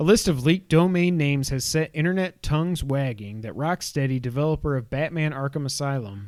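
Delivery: ordinary delivery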